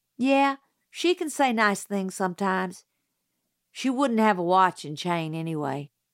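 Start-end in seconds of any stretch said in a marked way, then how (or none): none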